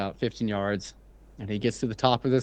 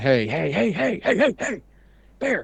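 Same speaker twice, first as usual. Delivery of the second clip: mock very high, swooping, rising screaming hollers; 10 semitones higher than usual. Retelling how their dad screamed at an approaching bear, imitating a scream. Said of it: "My dad's screaming".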